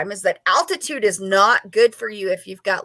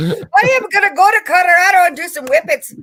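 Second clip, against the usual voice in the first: loud, very high-pitched, put-on Scottish accent; 11 semitones higher, 8 dB louder than usual. Mid-conversation, blurting out a sudden line in a Scottish accent. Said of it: "I just said that with a Scottish accent".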